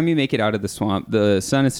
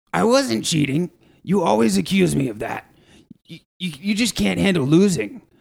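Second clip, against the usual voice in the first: higher, raspy, creaky, rough orc voice; 9 semitones higher than usual. Narrating a scene, voicing one of two arguing orcs, in an orc voice. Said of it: "the voices of what seems to be two orcs".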